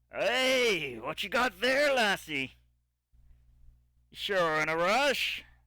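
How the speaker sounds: gruff, loud dwarf voice, drawn-out "hey". Storyteller voicing a dwarf who approaches the listener's character, in a gruff dwarven voice. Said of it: "a gruff dwarven voice".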